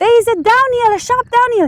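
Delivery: loud scream.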